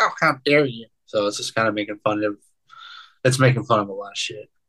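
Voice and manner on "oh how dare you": put-on cranky, offended, crotchety old lady voice. Explaining the zine's name by imitating a crotchety old lady. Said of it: "a crotchety old lady would say".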